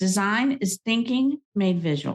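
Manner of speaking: plain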